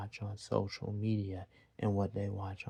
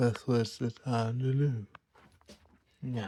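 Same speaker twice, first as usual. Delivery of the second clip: speaking through a yawn, louder; 3 semitones higher, 6 dB louder than usual. Telling parents what their children need, yawning. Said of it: "I know I'm yawning".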